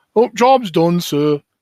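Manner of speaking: stock Northern English accent. Discussing video game voices, demonstrating an average character in a northern english stereotype accent. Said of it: "Midlands English stereotypes or Northern English stereotypes".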